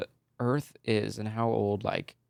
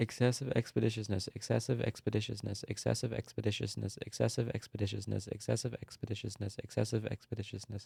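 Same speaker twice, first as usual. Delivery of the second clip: soft speech rattled off at top speed; 7 dB quieter than usual. Dared by the other speaker to say a phrase five times fast, fast tongue twister. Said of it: "Say that five times fast".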